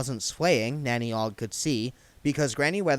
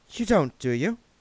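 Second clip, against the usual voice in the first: tone easing off, gentler; 4 semitones higher than usual. Reading one character's question to another character, in a softer tone. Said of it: "she said in a softer tone of voice".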